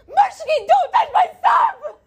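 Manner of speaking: shouting. Showing that s0 can yell: yelling. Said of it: "I could yell".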